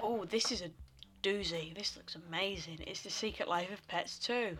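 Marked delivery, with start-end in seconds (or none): 1.7-2.8 sarcastic, fake enthusiastic tone meaning the opposite. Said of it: "That's sarcasm".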